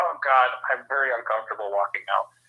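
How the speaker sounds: usual speaking voice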